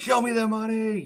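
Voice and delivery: yelling, voice way up high.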